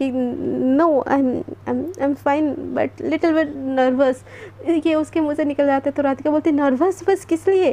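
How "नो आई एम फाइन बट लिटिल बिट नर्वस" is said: stammering, stuttering, much slower. Narrating a story, Devika answers Radhika's question about her health, stammering. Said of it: "एकदम हकलाते हुए देविका बोलती".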